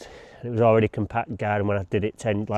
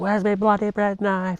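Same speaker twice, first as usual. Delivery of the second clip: very high-pitched mother voice; 11 semitones higher than usual. Retelling a complaint from mum about a missing bread knife: imitating mum. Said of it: "she was like".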